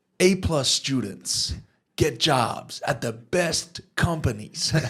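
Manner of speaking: brash, bold put-on American hustler accent. Quoting something he once read, in its author's voice: imitating an American hustler accent. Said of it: "Should I drop the accent?".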